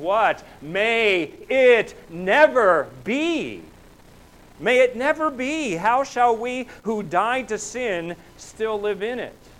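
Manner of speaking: intense, climbing outburst. Quoting Paul's reply, the speaker reads it with a rising, intense voice. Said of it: "you can almost hear the voice going up a little bit, the intensity".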